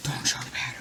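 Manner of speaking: unvoiced, whispered aside.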